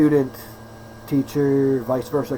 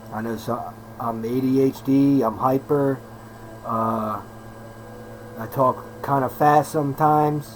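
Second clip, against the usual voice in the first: deliberately slower, slow, careful pace. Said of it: "I'm gonna try to talk a little bit slower".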